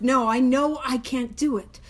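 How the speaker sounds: normal talking voice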